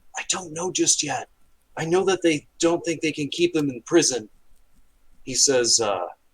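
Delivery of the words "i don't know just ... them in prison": whispering, higher pitch. Voicing a character answering a spell message: whispered voice. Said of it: "you'll hear a voice kinda whispered say".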